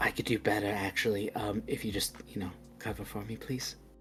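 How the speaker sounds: barely audible, very quiet in-character whisper. Player speaks a character's line, whispering in character. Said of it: "I was whispering in character".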